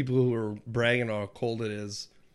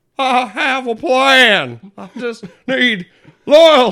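very high, very loud belting, "plan" drawn out; 13 semitones higher, 14 dB louder than usual. Chatting about a video game, the speaker quotes a character, Dutch impression. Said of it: "You sound just like him".

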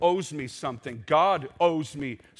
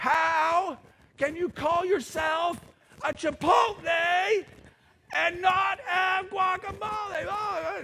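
very high shrill full-on scream, drawn-out "how". Showing how grown adults react to disappointment, loud screaming voice. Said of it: "in a very loud, screaming voice".

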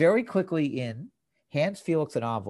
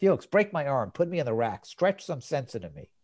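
usual speaking voice

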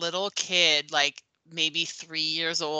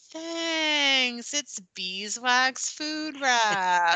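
high, very slow, fake delighted gratitude; 8 semitones higher than usual. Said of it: "pretending to be excited about this avocado".

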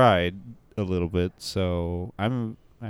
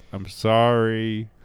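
wailing crying yell, sorry drawn out; 3 semitones higher, 4 dB louder than usual. Acting out a child being spanked: imitating a crying yell. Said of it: "You're just yelling it".

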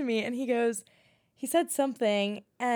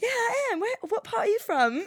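very high-pitched, fake, put-on English accent; 10 semitones higher than usual. Retelling answering a man's buddy who asked if they were english, put-on british accent. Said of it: "I started talking to him in my British accent".

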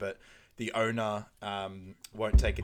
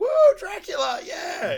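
mock shrill, very high, loud swooping whoop; 11 dB louder than usual. Retelling nervous Peter performing his Dracula musical: imitating Rachel hyping him up. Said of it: "Rachel's like really G'ing him up".

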